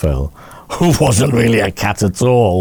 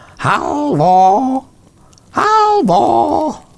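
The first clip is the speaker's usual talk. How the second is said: shrill, screechy, high troll voice calling out. Reading a story, a troll calls from the forest to the man cooking for trolls, screechy troll voice. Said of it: "It was one of those screechy kind of troll voices".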